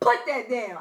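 very loud shouting. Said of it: "real loud".

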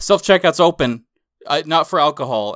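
loud, high-pitched yelling. Retelling what a store worker yelled in the speaker's ear, retelling a yell. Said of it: "he's like yelling in my ear".

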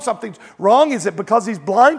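normal talking voice

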